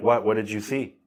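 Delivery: ordinary talk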